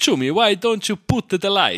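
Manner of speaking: put-on thick, strong Italian accent, very high pitch. Retelling what an italian ex-colleague once said, the speaker mimics: strong italian accent. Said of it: "so einen richtig starken italienischen Akzent".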